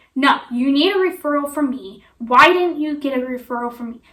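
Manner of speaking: loud, rude, domineering, bossy tone. Retelling a doctor insisting on a referral: imitating a rude, bossy voice. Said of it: "That's exactly how her voice was".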